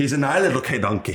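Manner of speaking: bad, awful put-on Irish accent. Joking about a made-up animal called king donkey: irish accent. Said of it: "That was Irish".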